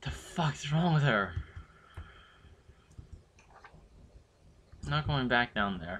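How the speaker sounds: frightened, about to cry. Streamer refuses to go back down in the game, scared near tears. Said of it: "I'm gonna cry just getting too scared".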